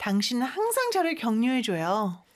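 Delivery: ordinary talk, nothing marked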